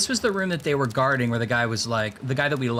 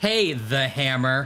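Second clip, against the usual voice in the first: dry, mocking, sarcastic put-on tone. Acting out a man sending the accounting to his boss, imitating a sarcastic tone. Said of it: "being sarcastic. He's like".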